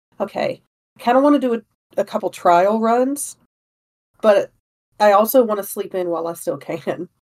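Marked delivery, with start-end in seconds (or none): none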